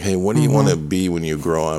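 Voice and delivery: ordinary talk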